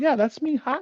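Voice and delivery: acted high-pitched girlish voice.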